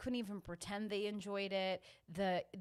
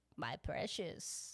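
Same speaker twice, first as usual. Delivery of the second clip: whispered, breathy, hushed fantasy creature voice; 5 semitones lower, 6 dB quieter than usual. Speaker mimics tourists doing a voice, in a Lord of the Rings creature voice. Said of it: "They're doing that voice".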